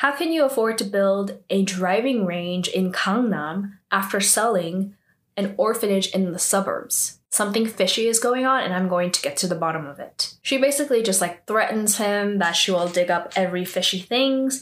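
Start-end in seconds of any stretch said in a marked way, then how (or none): none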